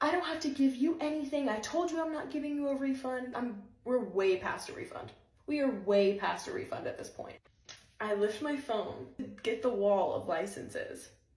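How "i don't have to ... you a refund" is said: play-acted high, angry, lost-temper outburst. Retelling a salon worker refusing a refund, imitating an angry outburst. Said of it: "that's when she lost it".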